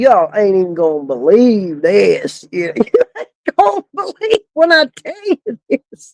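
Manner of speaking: laughing speech, swooping and broken up by laughter. Retelling telling a family some unbelievable news, retelling laughing while talking. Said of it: "wondering why I'm laughing so hard".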